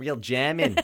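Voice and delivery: put-on laughing Australian accent.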